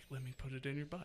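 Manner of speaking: hushed, very quiet, barely audible half-whisper. Retelling half-whispering to a girlfriend on the couch near grandma: retelling a half-whisper. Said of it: "I whispered to her".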